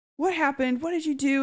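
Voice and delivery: furious, high-pitched, angry yell. Reading out a book scene where one character yells at another: retelling an angry yell. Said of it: "yelling at, uh, yelling at Xaden".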